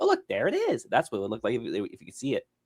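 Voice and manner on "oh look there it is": very high-pitched character voice. Retelling a voice actress doing her character's line: Toph voice. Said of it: "She did a whole voice and everything".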